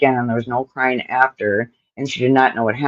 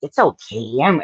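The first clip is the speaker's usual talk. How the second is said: put-on creepy villain voice. Guessing how the man's voice in the report sounded: Joker voice. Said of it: "like a Joker or something?".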